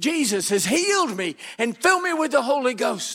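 mild, high-pitched yell, scream only hinted. Speaker recounting a preacher grabbing them, retelling the preacher's scream. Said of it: "screamed in my face".

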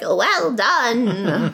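high, tiny, little voice. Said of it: "And Flitwick, the professor, is like".

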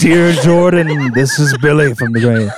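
mocking, put-on ghostly voice. Joking about getting mail, making fun of Billy Graham: mocking Billy Graham voice. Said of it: "we're making fun of you".

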